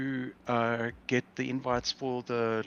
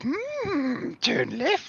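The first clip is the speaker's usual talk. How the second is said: very high, swooping cartoon dog voice, drawn-out "Mm"; 13 semitones higher, 3 dB louder than usual. Imitating a map app's voice giving directions: Scooby-Doo voice. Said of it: "I had it on, um, uh, Scooby-Doo".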